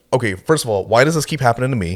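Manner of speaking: confused and heated, angry voice. Retelling own reaction after a stranger stares back: retelling being confused and heated. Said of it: "I'm confused and I'm heated at the same time".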